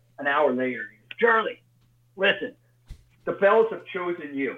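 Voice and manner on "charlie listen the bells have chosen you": put-on gruff Philadelphia accent, pitched up. Retelling a call back an hour later: imitating Frank. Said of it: "Frank's kind of a gruff man from Philly".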